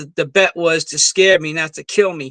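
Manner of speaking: ordinary talk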